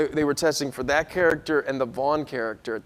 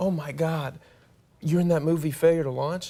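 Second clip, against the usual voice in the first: put-on nervous woman voice; 3 dB quieter than usual. Retelling a woman who came up in an Applebee's: imitating a nervous woman. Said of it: "she was so nervous".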